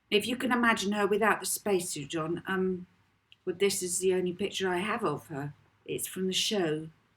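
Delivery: ordinary delivery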